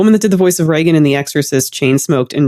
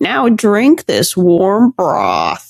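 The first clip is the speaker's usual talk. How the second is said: put-on drawn-out, swooping old woman voice; 5 semitones higher than usual. Quoting an actress's off-screen line in a film: Winona Ryder old woman voice. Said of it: "it's an old woman voice".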